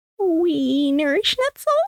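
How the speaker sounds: soft, quiet voice. Retelling what a sister said in the sauna: imitating sister speaking quietly. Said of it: "And just quietly, my sister goes".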